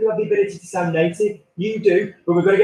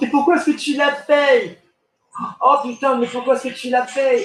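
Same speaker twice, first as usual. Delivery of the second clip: furious, heated, fast, high-pitched angry outburst; 6 semitones higher than usual. Speaker shows Jacqueline where emotions come from, using the diaphragm, angry. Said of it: "So now say angrily".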